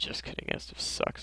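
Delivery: soft, joking whispered aside, like a secret.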